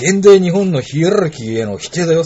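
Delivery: high, heated, angry scolding voice.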